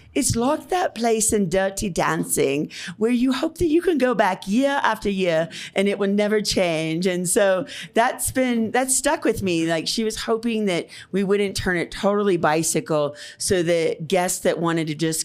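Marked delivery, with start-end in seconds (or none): 0.1-7.0 put-on English accent, pitched higher. Hotel owner quoting a lady from england, in an english accent. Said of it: "so maybe I'll do an English accent".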